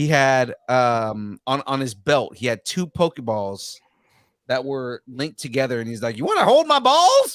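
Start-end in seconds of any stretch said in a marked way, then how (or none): 6.2-7.4 squeaky, very high, loud cosplay character voice. Retelling what a cosplayer said at a convention: imitating Master Roshi voice. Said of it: "in character and was doing the voice perfectly".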